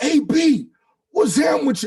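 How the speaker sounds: shrill, amped-up, very high and loud excited yell. Recalling shouting at an NFL player who was giving back, retelling a loud yell. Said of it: "I'm literally talking like this".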